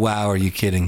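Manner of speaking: ordinary talk, nothing marked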